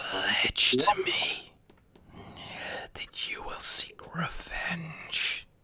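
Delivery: breathy, whispered ghostly voice. Voicing a murdered spirit demanding vengeance: whispering spirit voice. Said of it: "hear its whisperings".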